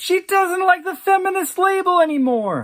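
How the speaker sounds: play-acted, very high, shrill, stricken outcry. Retelling what a friend screamed coming through the door: imitating a scream.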